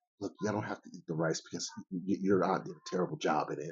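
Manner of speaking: hushed, breathy whisper. Retelling what mom said to the kids downstairs: imitating mom whispering. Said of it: "she's whispering".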